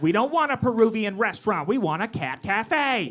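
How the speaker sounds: territorial neighborhood guy voice.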